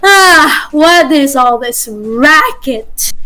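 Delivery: groggy just-woken voice, still strong, tired and slow. Showing game masters how someone just woken from a nap sounds: strong but tired voice. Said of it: "a strong but tired voice".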